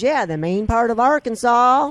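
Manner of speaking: put-on heavy, thick Southern accent, very loud. Retelling his grandpa's answer about where he's from, Walker's thick Southern accent. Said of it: "with his thick Southern accent".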